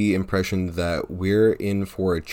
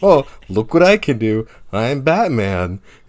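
loud, drawn-out, dripping, mocking sarcasm; 4 semitones higher, 7 dB louder than usual. Picturing Alfred mocking Batman, doing a mock-sarcastic Alfred voice. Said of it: "being really sarcastic to Batman".

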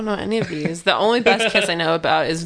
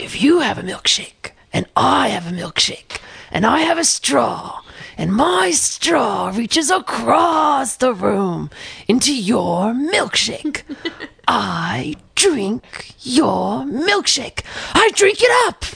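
very slow, raised-pitch drawl, each word drawn out; 5 semitones higher than usual. Performing an impression after the others ask to hear it: Daniel Day-Lewis impression. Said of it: "such a good impression of him".

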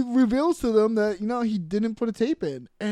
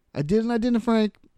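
plain

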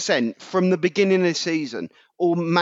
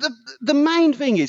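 loud shouting. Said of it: "I'm really sorry I'm shouting at children here".

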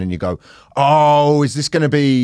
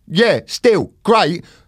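put-on Peckham accent, South London; 7 semitones higher than usual. Quoting the agent from Peckham reacting to the show title, Peckham accent. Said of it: "because my agent is from Peckham, when he said it, he's like".

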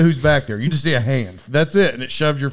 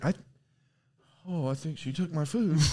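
very soft, very quiet muttering under the breath; 13 dB quieter than usual. Retelling an old lady waiting on her food: imitating someone mumbling. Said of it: "She's just mumbling to herself".

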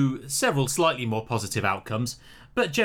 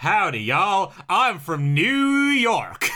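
fake American accent, pitched up; 6 semitones higher, 4 dB louder than usual. Planning next week's america episode and trying out accents: put-on american accent. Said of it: "Accents would be interesting".

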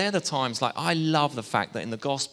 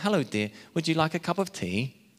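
put-on higher, nice, not-quite-posh English accent. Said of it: "nice English accent".

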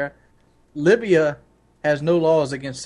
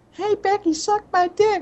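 put-on squeaky, very high unbroken boy's voice. The speaker imagines what a 12-year-old would say, in an unbroken 12-year-old's voice. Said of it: "a 12-year-old voice that hasn't even dropped".

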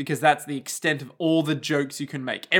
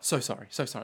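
put-on rushed, hurried, sheepish tone; 4 semitones lower, 8 dB quieter than usual. Retelling the host's answer to the producer: imitating someone apologizing. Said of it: "is like".

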